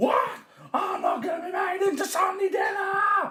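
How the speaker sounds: very high, crowing, roaring cockerel voice. Reading a story aloud, voicing the cockerel as he roars. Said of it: "Roared the cockerel".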